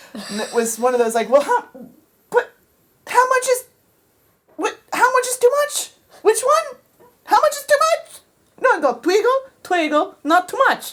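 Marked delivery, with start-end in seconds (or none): 8.6-10.9 very bad, fake, put-on Italian accent. Retelling someone's instructions about how much to twiggle, in a bad italian accent. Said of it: "I'm going to do a very bad Italian accent".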